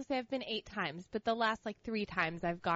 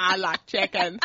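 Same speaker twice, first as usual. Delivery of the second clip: slow, drawling put-on voice; 2 semitones lower than usual. Repeating a quoted line from a friend's story: Forrest Gump voice. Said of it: "Like Forrest Gump? Like, like, in that voice?".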